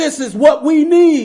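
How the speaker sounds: loud, very high-pitched call. Retelling the manager holding up a flyer to the kitchen: retold loud announcement. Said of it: "spoke in a loud voice".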